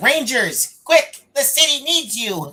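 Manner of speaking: very high, loud cartoon robot voice. Retelling a past moment, speak in the Alpha voice throughout. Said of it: "I did the alpha voice the entire time".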